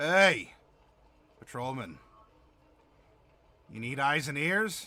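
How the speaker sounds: gruff voice. A game master voices a man on a cot addressing the patrolman, in a gruff voice. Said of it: "a rather gruff voice address you".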